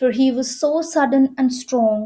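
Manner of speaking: plain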